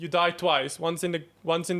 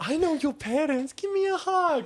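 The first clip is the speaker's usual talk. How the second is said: put-on creepy voice, higher pitch; 11 semitones higher than usual. Joking about petting a dog that runs away: put-on creepy uncle voice. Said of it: "that, like, creepy uncle".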